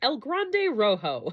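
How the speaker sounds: fake American accent, put on on purpose. Saying her fiancé's banda nickname, on purpose, in a deliberate put-on gringa accent. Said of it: "I said it with a gringa accent on purpose".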